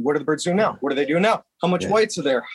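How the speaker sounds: pushy, insistent, hard-charging delivery. Imitating Ben Webster calling during scouting: imitating Ben Webster, hard charging. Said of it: "who's just hard charging".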